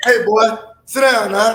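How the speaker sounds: slow, firm, stern disciplinarian scolding voice. Showing how the kids get disciplined: disciplining voice. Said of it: "give him that voice".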